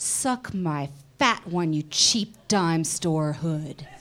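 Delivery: dramatic script reading delivery. Reading a scene from a summer film aloud with others: dramatic reading. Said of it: "we're doing a dramatic reading".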